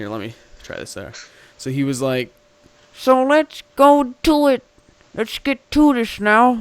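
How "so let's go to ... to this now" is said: very high, very loud, booming storybook cartoon wizard voice. Demonstrating how an evil cartoon character talked, impression of a cartoon magician. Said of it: "here's a depiction of his voice".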